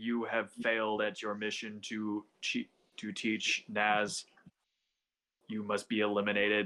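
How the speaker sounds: expressionless, flat monotone robotic alien voice. Voicing a character who confronts an old master: monotone Rhodian voice. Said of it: "just a monotone Rhodian voice".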